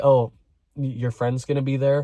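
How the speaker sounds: put-on crushed, broken, beaten-down, defeated tone. Retelling their own reply to him, in a broken, defeated tone. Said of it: "the most broken, defeated tone".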